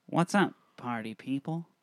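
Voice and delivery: extra nasal tone. Redoing a greeting line at another person's direction, more nasal. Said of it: "a little naslier".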